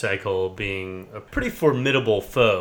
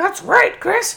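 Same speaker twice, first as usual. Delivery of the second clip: very high, loud, squeaky, raspy cartoon frog voice; 6 dB louder than usual. Teased about wanting an excuse to use it, replying to Chris in Slippy voice. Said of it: "an excuse to use your Slippy voice again today".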